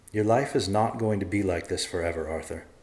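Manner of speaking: usual speaking voice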